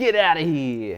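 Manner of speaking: New York accent coming through. Justin reacts as a spell gets denied, his New York accent coming out. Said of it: "Justin's New York accent coming out there".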